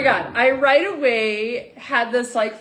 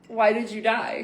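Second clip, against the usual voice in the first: put-on whisper; 4 dB quieter than usual. Retelling what is said whenever a cardinal appears: imitating own whisper. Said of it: "I whisper under my breath".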